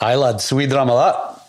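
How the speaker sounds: put-on Scottish accent. Asked if they can do a Scottish accent, the speaker tries one. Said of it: "How good is your Scottish accent? Can you do one?".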